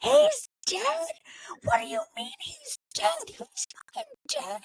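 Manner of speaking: raw, very high-pitched screaming. Retelling a reaction video filmed on hearing of a death: retelling own screaming. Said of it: "I'm just screaming into the camera".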